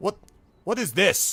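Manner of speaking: angry character voice. Voicing a stranger stepping in from the forest's edge: angry in-character voice. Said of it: "looking rather, um, sort of, you know, angrily".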